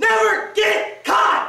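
high, slow, booming, emphatic shout. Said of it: "say it like you mean it".

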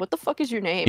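plain

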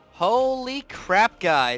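hyped-up, thrilled, swooping exclamation. Streamer test-flying a new loadout for an update, excited. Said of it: "This is exciting!".

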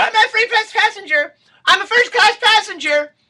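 shrill, insistent shouting, very high and loud. Retelling a late passenger running up to the plane, imitating Melanie Griffith demanding to board. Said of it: "she's hustling up there".

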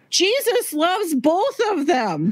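put-on very high, sing-song, blurted child's shout. Retelling how a little kid shouted out from the pew: imitating a kid shouting out. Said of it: "shouted out from the pew".

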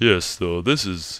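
low put-on announcer voice, done up. Imitating the viral homeless announcer from a new YouTube video: imitating the viral announcer's voice. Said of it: "I'll talk in his announcer voice".

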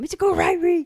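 put-on very high, very loud, shrill, furious angry yell.

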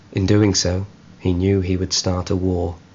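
ordinary delivery

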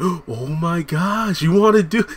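weak put-on voice, high-pitched, slow and stretched out. Retelling how Pam reacts to the tracking app, doing a bad Pam impression. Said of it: "I can't really do a good Pam impression".

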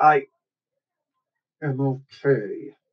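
put-on speech through clenched teeth. Retelling an armored man's reply after flinching when hit, acted through gritted teeth. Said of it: "he's literally talking through gritted teeth".

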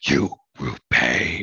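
very deep, low, menacing villain voice. Quoting a line from a dull movie: Frank Welker voice impression. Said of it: "It's a really good impression".

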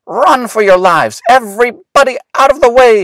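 high, loud crying out. Narrator reads Willis after a kitten meows up at him, crying out. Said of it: "cried Willis".

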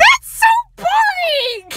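screaming. Reacting to the other speaker's pizza topping answer, screaming. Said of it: "I'm screaming right now".

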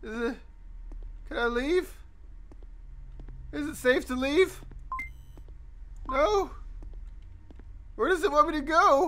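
voice cracking with nerves. A scared streamer talks to viewers during a game, voice cracking, nervous. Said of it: "My voice is cracking".

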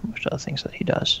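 ordinary delivery, nothing marked

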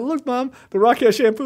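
high put-on British teenager voice, British accent. Retelling a clip of a teenager showing his mom something, imitating a British teenager. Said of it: "like this British teenager showing his mom".

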